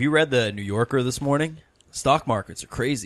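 put-on generic everyday American accent. Asked by another speaker to repeat a line: American accent. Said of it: "but in an American accent".

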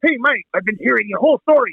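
zany, crazy mad-scientist delivery. Retelling how a man called the mad scientist greeted Mike: Back to the Future mad scientist voice. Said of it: "He sounded like the freaking dude from Back to the Future".

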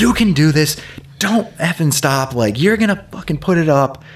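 play-acted high scream, right up close. Retelling a woman screaming in the speaker's face during a lift, imitating her screaming. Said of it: "she just starts screaming at me".

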